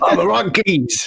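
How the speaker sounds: rough, gruff put-on voice. Slipping into a recurring character's voice: gruff character voice. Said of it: "Somehow this voice is right easy to do".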